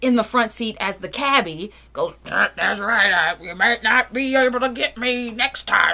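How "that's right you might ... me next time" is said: put-on Cockney with grumbly old-smoker voice. Retelling how she, playing the cabbie from the front seat, answers: grumbly Cockney-ish smoker voice. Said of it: "Cockney accent-ish, but she's trying to do like a grumbly old smoker voice".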